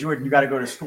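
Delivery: mild, scolding, fatherly half-yell. Retelling how the dad yelled at him to board the bus: imitating a dad yelling. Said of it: "my dad would yell at me".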